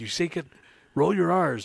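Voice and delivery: high mock taunt.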